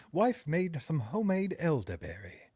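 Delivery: Renaissance-style voice. Reading out a line about homemade elderberry in a Renaissance type voice. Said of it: "a Renaissance type voice".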